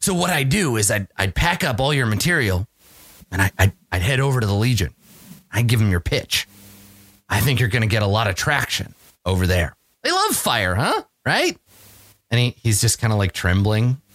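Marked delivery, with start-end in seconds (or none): 0.0-11.6 put-on voice of an old man. Voicing Keeb, who interrupts a scientist pitching a death ray: voicing Keeb. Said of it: "the guy who looks old stops, and he says".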